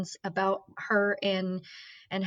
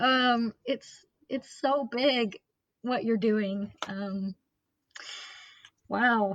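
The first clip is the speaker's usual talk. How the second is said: slow, choked-up, tearful voice catching. Thanking a guest for sharing a story of loss, teary-eyed, voice choked. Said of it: "I'm all teary-eyed over here".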